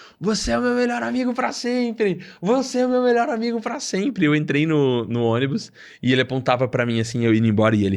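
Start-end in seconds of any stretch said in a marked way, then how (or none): 0.2-4.2 put-on, very high, repeated shouting. Retelling how a man shouted to everyone at the bus terminal: imitating someone shouting. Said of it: "ele começou a gritar".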